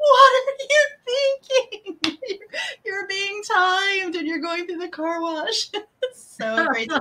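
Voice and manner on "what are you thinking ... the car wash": high-pitched shouting. Recapping a TV show, speaker reenacts everyone screaming at the TV. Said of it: "we're all screaming at the TV going".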